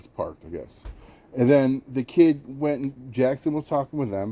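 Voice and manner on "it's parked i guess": mock muttering, much quieter, lower. Retelling a man's unsure answer about a parked car, imitating a mumble under breath. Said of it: "like under his breath".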